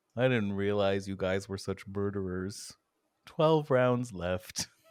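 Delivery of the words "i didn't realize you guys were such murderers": sorrowful, dejected voice, rushed. Game master voices someone over the magical pa system to the players, sad voice. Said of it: "you hear a sad voice be like".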